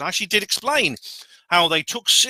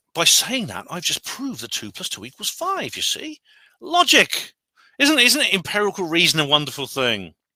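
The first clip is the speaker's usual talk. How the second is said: mocking, heavily sarcastic, swooping sing-song delivery; 4 semitones higher than usual. Answering someone's comment: sarcastic. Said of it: "I'm being as sarcastic as David Smith now".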